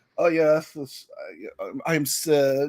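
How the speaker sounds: very slow, smarmy Eastern European drawl. Retelling an actor's audition example: douchey eastern european guy voice. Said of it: "a really douchey bag Eastern European kinda guy".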